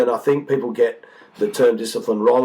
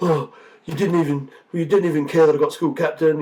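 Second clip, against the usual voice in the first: put-on angry, accusing outburst in a child's voice; 4 semitones higher than usual. Retelling a child's complaint about being chosen as school captain: imitating an angry child. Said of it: "when he was angry yesterday".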